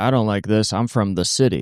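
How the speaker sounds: imitated Southern accent. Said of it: "talks with a Southern accent".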